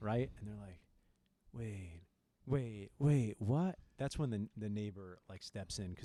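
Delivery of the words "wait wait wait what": acted-out confused voice, very slow and drawn out. Retelling how students react when told to play forty: imitating a confused student. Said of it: "It's like the dumb card".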